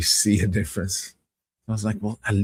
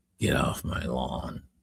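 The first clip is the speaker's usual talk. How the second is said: bad, awful, breathy whispered delivery; 8 semitones lower, 7 dB quieter than usual. Showing the chat an awful Clint Eastwood impression. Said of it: "my Clint Eastwood, which is awful".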